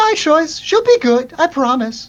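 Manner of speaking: very high, lilting, swooping sing-song voice. Answering a question in a role-play scene, a character speaks in a very high lilting voice. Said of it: "you hear the the very high lilting voice".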